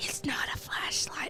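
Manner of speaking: soft, unvoiced whisper.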